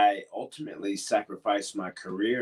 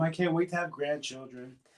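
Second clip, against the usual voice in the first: high-pitched motherly voice; 7 semitones higher, 4 dB quieter than usual. Recalling what his mom always said, imitating mom's high-pitched voice. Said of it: "She has such a high pitched voice, my mom".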